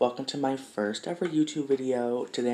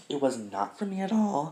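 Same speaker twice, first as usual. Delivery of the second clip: voice cracking and breaking partway through; 4 semitones higher than usual. Telling viewers why you dropped out of school in grade nine, voice cracking. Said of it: "Voice crack, embarrassing".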